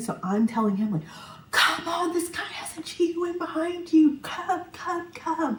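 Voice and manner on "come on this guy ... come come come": shrill, very high, drawn-out scream. Retelling calling a visitor to come inside: imitating someone screaming. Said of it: "I'm screaming".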